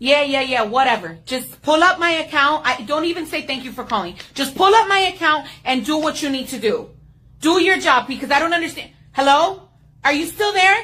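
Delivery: loud ranting shout. Customer on a service call, yelling at the agent. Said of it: "you started yelling".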